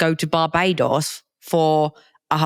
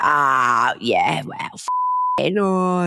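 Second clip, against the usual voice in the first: put-on Cockney accent. Telling how the speaker's dad answered news of Christmas plans: Cockney accent. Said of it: "in his Cockney accent".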